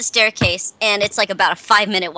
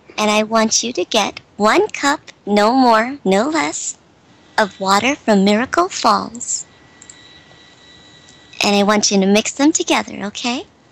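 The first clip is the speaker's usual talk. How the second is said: whispering female voice. Voicing an unseen whispering voice giving instructions about the vines: whispering female voice. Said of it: "you hear the whisper".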